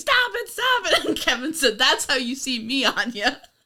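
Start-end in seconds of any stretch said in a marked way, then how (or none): 0.0-1.1 mock very high, frantic-sounding, repeated high-pitched yell. Retelling how the manager of the place yelled, imitating someone yelling. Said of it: "who's yelling like".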